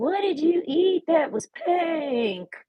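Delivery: put-on high hillbilly accent, "pink" drawn out. Retelling what a nurse asked, in a fake hillbilly accent. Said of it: "she spoke to me like a hillbilly".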